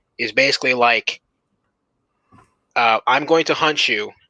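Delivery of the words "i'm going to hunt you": put-on robot computer voice. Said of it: "using a stupid robot computer voice to talk for him".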